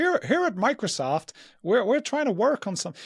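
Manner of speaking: very high, throaty voice pushed up in the throat. Explaining who shares that voice, doing a Bill Gates throaty impression. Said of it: "that sort of throat thing".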